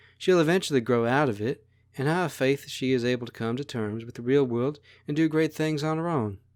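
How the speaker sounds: ordinary delivery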